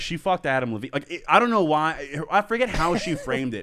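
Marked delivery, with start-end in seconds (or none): none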